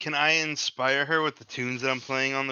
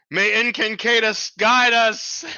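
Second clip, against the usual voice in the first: loud, high yell carrying a long way; 8 semitones higher, 7 dB louder than usual. A tabletop player's character calls out to the group from a ways away, yelling from a distance. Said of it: "I'm gonna yell as like we're like a".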